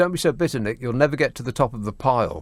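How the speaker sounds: normal talking voice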